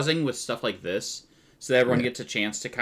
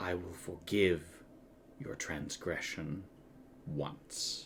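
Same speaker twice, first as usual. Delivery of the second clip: very soft whisper, barely audible; 6 semitones lower, 14 dB quieter than usual. Narrating a story, the speaker voices the Death Knight answering, Death Knight whisper. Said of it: "The Death Knight kind of whispers".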